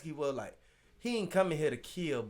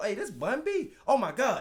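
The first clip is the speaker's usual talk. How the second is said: put-on panicked voice, higher; 6 semitones higher, 4 dB louder than usual. Acting out an intruder recognizing a celebrity: imitating a frantic intruder. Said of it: "You frantic".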